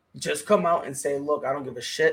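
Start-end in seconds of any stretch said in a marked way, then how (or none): none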